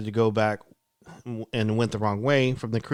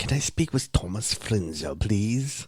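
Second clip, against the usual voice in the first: phony, put-on British accent. Retelling a phone call to a front desk, put-on British accent. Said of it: "for some reason I did a British accent".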